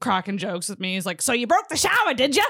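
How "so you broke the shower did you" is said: poorly done put-on Boston accent. Quoting the guy sent up to fix the shower, bad boston accent. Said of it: "A Cockney British accent".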